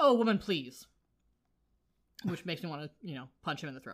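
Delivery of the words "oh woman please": plain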